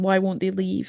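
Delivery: put-on whisper. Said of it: "he whispers".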